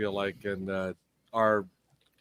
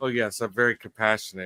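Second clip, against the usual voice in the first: usual speaking voice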